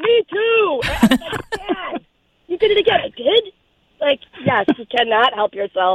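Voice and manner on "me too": very high, blurted yell. Telling how the dad keeps shouting out at a visitor, retelling a yell. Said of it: "He yells out".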